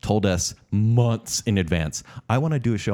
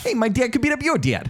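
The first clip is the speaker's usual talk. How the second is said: put-on New Jersey accent, pitched high. Describing a talking mongoose from a past tournament, Jeff the Mongoose New Jersey accent. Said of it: "a mongoose with like a New Jersey accent".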